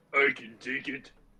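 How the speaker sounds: speaking through clenched teeth. A character who lost most of his HP looks up at his attacker, through gritted teeth. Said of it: "through gritted teeth".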